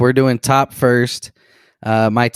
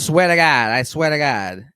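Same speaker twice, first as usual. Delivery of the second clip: fake, mock Boston accent; 4 semitones higher than usual. Imitating how people swear to each other, in a mock boston accent. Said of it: "better Boston accent than Ben Affleck".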